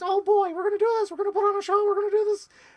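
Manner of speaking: shrill, very high, booming, earnest cartoon mouse voice. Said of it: "Mickey Mouse is Mickey Mouse".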